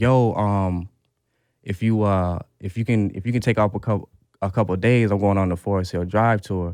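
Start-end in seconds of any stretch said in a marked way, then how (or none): none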